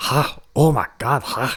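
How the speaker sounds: over-the-top, exaggerated, high, very drawn out Scottish accent. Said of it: "a very exaggerated, uh, Scottish accent".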